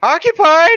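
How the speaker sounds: very shrill, very high, very loud screech. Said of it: "does he screech like".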